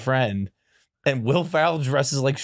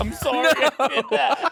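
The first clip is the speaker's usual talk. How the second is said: very high, weepy, blubbering crying voice; 11 semitones higher than usual. Retelling a scene in a car next morning: imitating someone crying. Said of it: "Will Ferrell's crying".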